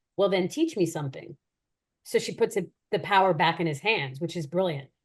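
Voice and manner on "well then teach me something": ordinary talk, nothing marked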